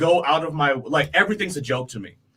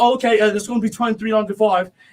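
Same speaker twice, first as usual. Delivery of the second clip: faked English accent, higher; 5 semitones higher than usual. Retelling giving a customer their total at work, in a put-on English accent. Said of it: "start talking with an English accent".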